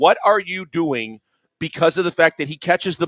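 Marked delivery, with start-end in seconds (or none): 0.0-1.2 drawn-out, screaming yell. Retelling reacting to a player's play at the tv: imitating screaming at the tv. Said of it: "I'm screaming at the T V again".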